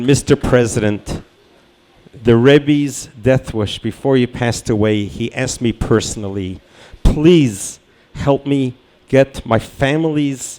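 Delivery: ordinary delivery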